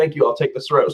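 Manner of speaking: ordinary talk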